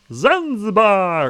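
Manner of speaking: very high, loud, goofy silly voice. Daring listeners to say a word at random: funny voice. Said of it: "you have to say it like that".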